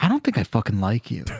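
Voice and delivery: low mutter under the breath. Imitating a therapist talking under her breath: imitating muttering under breath. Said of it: "under her breath".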